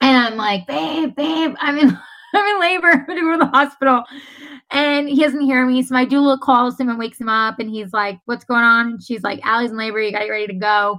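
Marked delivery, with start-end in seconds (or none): 0.7-4.0 screamed call, pitched high. A woman in labor retells calling to her sleeping husband: retelling a scream. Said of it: "I'm screaming from the bathtub".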